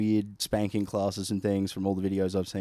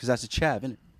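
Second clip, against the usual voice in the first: normal talking voice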